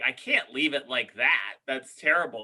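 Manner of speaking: ordinary talk, nothing marked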